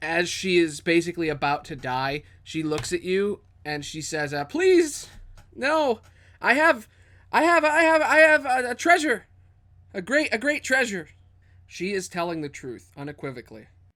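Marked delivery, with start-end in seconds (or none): 4.5-11.1 stammering, very high, loud, terrified begging. A game master voices a dying kobold begging the player's character: terrified pleading kobold voice. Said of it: "You see a small kobold in the shadows. It seems to just be standing there. She looks rather cutesy. / She looks rather cutesy. / You're a wanted kobold".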